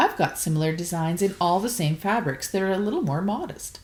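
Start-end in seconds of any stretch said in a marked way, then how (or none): none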